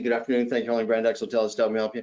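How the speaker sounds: hurried, rattled-off, scripted-sounding delivery. Showing a hotel phone greeting answered too fast: rushed, very quick delivery. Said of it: "they answer it really quickly".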